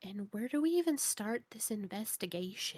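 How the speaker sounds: hushed voice, dropped low and quiet. Playing Alara, leaning in really close to everybody: lowered voice. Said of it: "lowers her voice".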